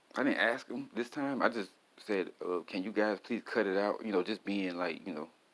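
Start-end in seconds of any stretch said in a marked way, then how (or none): 2.7-4.1 put-on sarcastic tone. Retelling own words to a cop: imitating own sarcastic tone. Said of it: "kinda sarcastic and funny with it".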